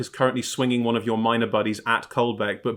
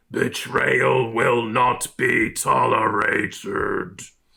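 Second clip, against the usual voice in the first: grave, rough, creaky stone-statue voice. Narrator voices the statue speaking to the players: bellowing statue voice. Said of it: "a voice from the statue bellowing".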